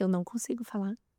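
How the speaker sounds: soft speech broken by sobs. Retelling what a crying woman said, imitating a woman sobbing. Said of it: "E ela soluçava e falava assim".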